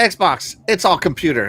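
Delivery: ordinary delivery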